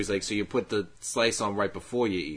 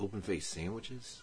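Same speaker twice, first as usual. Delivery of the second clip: mock-suspicious tone, much quieter; 10 dB quieter than usual. Retelling a deli counter man's reply to a customer, imitating a suspicious reply. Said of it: "Like real suspicious".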